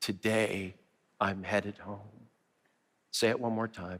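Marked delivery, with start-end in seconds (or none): 0.0-2.0 hushed, soft half-whisper in unison. Leading everyone to half-whisper the words together: half-whispering. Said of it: "Whisper them with me right now".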